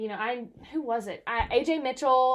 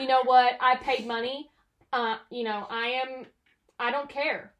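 ordinary talk

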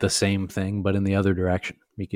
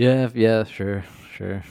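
slow, let-down, deflated, disappointed tone; 2 semitones higher than usual. Answering how they feel about the podcast: sounding disappointed. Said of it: "you sound very disappointed".

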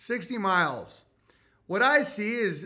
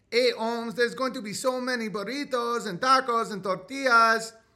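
put-on woman's voice with Mexican accent; 4 semitones higher than usual. Acting out a mexican woman's reaction to the name, in a mexican gal voice. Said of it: "Mexican gal voice".

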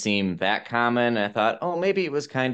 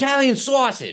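put-on very high, thick, rough Boston accent; 4 dB louder than usual. Retelling a man at the counter ordering, in a rough boston accent. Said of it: "Like in his very Boston-y".

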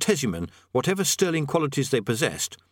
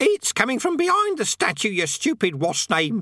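very high, slow, drawn-out parrot-like bird croak; 9 semitones higher than usual. Narrator reading a parrot's line in a story, in a croaking parrot voice. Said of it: "it croaked".

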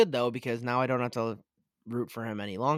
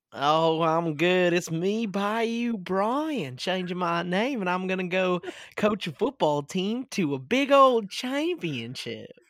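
fake Southern drawl, high and slow; 7 semitones higher, 4 dB louder than usual. Mocking a coach's fake Southern accent: Brian Kelly fake Southern accent. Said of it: "Brian Kelly put on a fake Southern accent".

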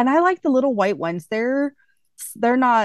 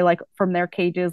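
plain

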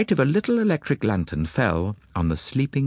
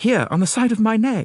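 self-important tone, much higher pitch; 9 semitones higher than usual. Ronald answers Poirot's question, speaking importantly. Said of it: "said Ronald importantly".

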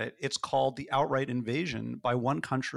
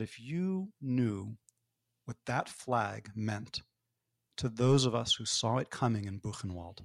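mock grave, very stern father's voice. Recalling the father's reply to the speaker's speech; imitating father's stern voice. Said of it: "in probably the sternest voice he'd ever used".

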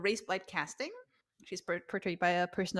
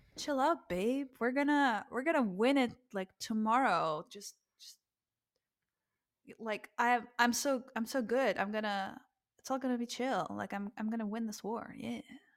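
mock cocky, swaggering male bravado; 3 semitones higher, 3 dB quieter than usual. Retelling how Paris answers Helen: imitating cocky guy. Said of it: "average straight guy cockiness".

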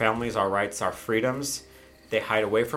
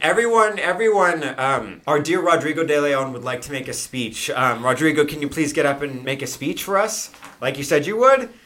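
high, raised yell carrying far; 5 semitones higher, 7 dB louder than usual. Voicing a woman at the head table calling everyone's attention: yelling to a crowd. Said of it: "she kinda has to yell".

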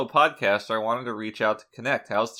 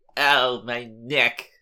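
put-on old New York comedian voice. Repeating a line at the other speaker's request: Woody Allen voice. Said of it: "can you say it like Woody Allen?".

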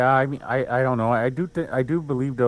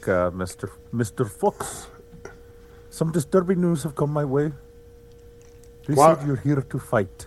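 put-on Pakistani accent, much higher; 2 semitones higher than usual. Imagining how St. Peter would address him, speaking as St. Peter in Pakistani accent. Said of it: "Like he's from Pakistan".

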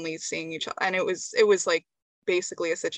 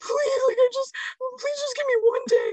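play-acted very high, sobbing, tearful pleading tone; 4 dB louder than usual. Acting out a voice memo sent during a fight: mock crying. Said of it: "crying and you're like".

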